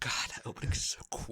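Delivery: fast, unvoiced whisper full of awe.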